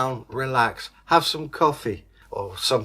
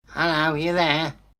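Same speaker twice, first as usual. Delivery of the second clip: high, squeaky little voice, called out; 3 semitones higher than usual. Reading a story, voice a squeaky caller greeting a man getting off his ship. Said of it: "he heard a squeaky voice".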